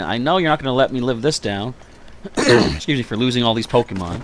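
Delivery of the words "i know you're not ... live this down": usual speaking voice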